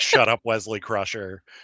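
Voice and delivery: ordinary talk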